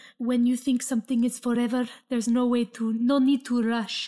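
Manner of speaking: imitated Italian accent. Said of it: "over an Italian accent".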